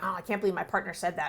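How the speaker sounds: put-on angry growling voice. Describing someone replaying a conversation with their partner later, imitating an angry growl.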